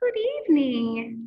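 velvety, silky, smooth-toned voice. A second monster appears and greets the narrator: high, silky voice. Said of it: "he said in a high, silky voice".

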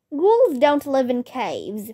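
plain

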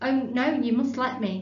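ordinary delivery

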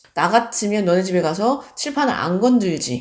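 plain

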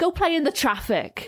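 put-on very high-pitched Welsh accent delivery. Quoting a character's line the way she says it: imitating Amber's Welsh delivery. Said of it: "she says it like".

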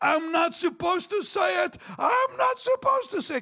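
hard sobbing in a very high voice. Retelling how a lady wept after the speaker would not budge; imitating someone crying. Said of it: "And she's crying this".

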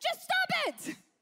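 very high, shrill, loud acted-out yell. Retelling how a man in his office yelled at someone, retelling a yell. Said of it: "he literally yells at him".

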